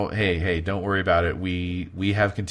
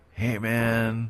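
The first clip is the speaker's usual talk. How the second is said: put-on super tired, sleepy or drunk-sounding voice; 3 semitones higher than usual. Voicing a caller on the intercom at four AM: super tired or wasted voice. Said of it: "either super tired or maybe wasted".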